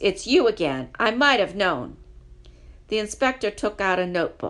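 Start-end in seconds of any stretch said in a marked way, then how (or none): 0.0-2.0 severe, stern, reproachful, raised voice. Reading a story aloud, the inspector's voice speaks to Paddington, stern voice. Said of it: "said a stern voice".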